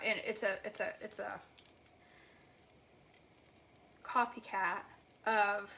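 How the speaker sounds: stammering over words. Describing a copycat drink recipe found on a blog, stuttering. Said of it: "I'm stuttering".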